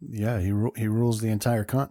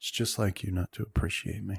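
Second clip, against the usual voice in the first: muttered, much quieter; 6 dB quieter than usual. Storyteller voicing Bloodtooth, who mutters after the listener speaks: Bloodtooth muttering. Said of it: "You hear some muttering from Bloodtooth".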